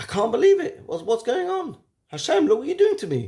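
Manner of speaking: very high, exasperated, frustrated outcry. Explaining how a traveler might have reacted, acting out frustration. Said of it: "You can almost hear the frustration in one's voice".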